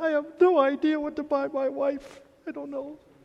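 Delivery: high, clueless man's voice, sounding at a loss. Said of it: "Especially the guys going".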